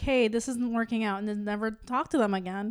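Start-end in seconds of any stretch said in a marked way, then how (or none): none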